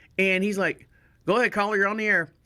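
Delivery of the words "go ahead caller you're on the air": put-on southern drawl in a radio host voice. Retelling how a radio host answered calls: imitating Shane's southern drawl. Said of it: "He had a nice southern drawl".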